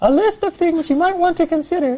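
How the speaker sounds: very high, piped-up voice. Speaker redoes a part Eugenia read before; imitating Eugenia, higher voice. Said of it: "with a higher voice".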